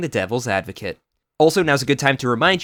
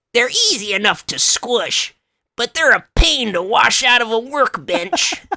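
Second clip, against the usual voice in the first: put-on slow, shrill goblin accent. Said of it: "You gotta say that with a goblin accent".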